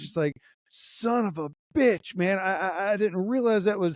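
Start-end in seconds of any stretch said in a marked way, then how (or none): 0.7-2.4 mock angry, slow, drawn-out, pissed-off. Speaker acting out how he reacted once it clicked, retelling an angry outburst. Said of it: "He was pissed".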